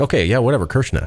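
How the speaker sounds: high, offhand, dismissive tone, a name mispronounced. Retelling a father's reply to being corrected: imitating a father's dismissive mispronunciation. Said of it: "And he's like".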